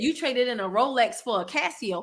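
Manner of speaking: normal talking voice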